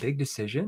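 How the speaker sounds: puzzled, confused, questioning tone. Showing how to answer a prospect's objection: confused tone. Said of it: "when I use a confused tone".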